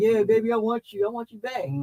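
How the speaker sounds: mock groveling, begging, pleading voice. Retelling a film character begging at the end: imitating someone begging. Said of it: "he begging at the end".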